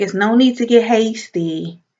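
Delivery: ordinary delivery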